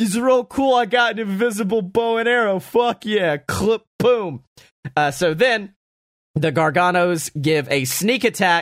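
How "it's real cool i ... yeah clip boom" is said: goofy, pitched-up, boastful dumb big-lug voice. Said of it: "I love that big dumb asshole as he's just like".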